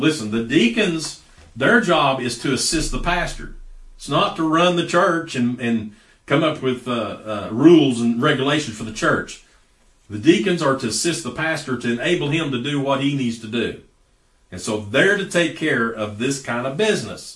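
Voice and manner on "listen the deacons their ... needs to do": plain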